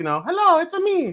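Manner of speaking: put-on high cartoon voice. Wearing a Mario Halloween costume, speaker does a bit, cartoon Mario voice. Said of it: "I could do either cartoon Mario".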